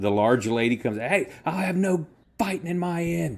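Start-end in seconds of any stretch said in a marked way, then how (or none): 1.0-3.4 cross, high-pitched voice. Voicing the large lady stopping a fight in her inn: angry large lady. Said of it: "angry all of a sudden".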